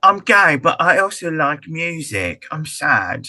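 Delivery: very slow put-on British accent. Mocking a film character's lines: put-on British accent. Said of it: "Very good British accents".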